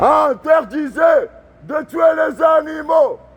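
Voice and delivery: high, slow, rally-style shouting. Alone at a protest, showing how he shouts slogans, shouting a protest slogan. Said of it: "je gueule comme ça".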